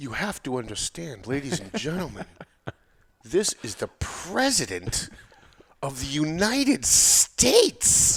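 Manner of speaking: announcer-style impression. Someone asks for an impersonation; the speaker does a Don Lemon impression. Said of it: "Can you do your impersonation of".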